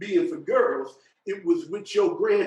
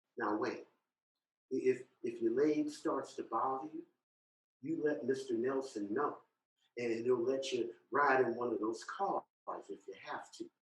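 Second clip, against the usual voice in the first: very quiet, low, hushed motherly half-whisper; 6 semitones lower, 12 dB quieter than usual. Retelling what the speaker's mom half-whispered at the parade, imitating mom's half-whisper. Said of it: "she whispers".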